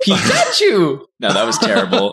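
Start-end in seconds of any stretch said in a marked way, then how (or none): 0.0-1.1 very high, bad creature cry. Asked by a friend whether they can do it, trying a Pikachu impression. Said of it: "Do you have a good Pikachu impression".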